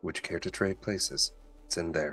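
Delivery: barely audible, very soft, hushed secretive whisper. Speaking in character to a teammate about a lock, whispering. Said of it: "I'm going to whisper so that he can hear it".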